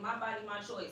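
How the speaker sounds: plain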